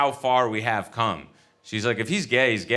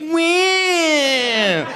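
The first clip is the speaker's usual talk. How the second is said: fake weeping whine, much higher, louder; 6 dB louder than usual. Retelling being made to weep in front of the in-laws, put-on weeping whine. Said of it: "she makes me weep".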